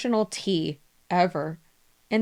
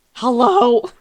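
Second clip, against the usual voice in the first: put-on annoyed, irritated tone with raised voice; 3 semitones higher, 8 dB louder than usual. Retelling answering the phone on work days: imitating own annoyed answer. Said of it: "you get the angry interruption".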